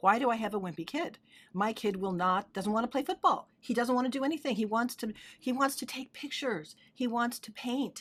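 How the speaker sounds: mocking, sarcastic griping whine. Retelling a client father's complaint about his son: imitating a sarcastic father. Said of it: "he was really kind of sarcastic".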